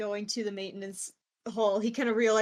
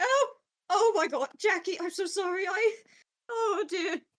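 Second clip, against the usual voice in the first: very high, flustered, horrified tone; 10 semitones higher than usual. Voicing a character who missed a swing at Jackie: horrified, flustered apology. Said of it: "He kinda looks up horrified for a moment".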